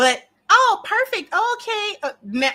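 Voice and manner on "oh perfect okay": very high, put-on Valley Girl voice and accent. Mocking a woman's polite act: imitating a fake Valley Girl accent. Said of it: "Got your little fake Valley Girl accent going".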